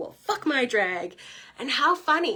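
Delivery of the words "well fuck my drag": play-acted, rage-fuelled, angry shouted outburst. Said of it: "rage typing on my computer going".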